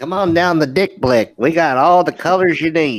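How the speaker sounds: funny helium-like voice. Pitching art supplies like a sponsor ad: funny helium-like voice. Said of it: "You don't even need to inhale that helium".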